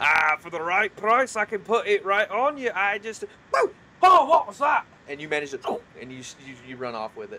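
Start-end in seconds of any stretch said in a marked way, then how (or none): 0.0-4.8 very high, very loud, shrill halfling voice. Voicing a halfling who catches a tiefling touching armor: voicing a halfling. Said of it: "this halfling steps out and says".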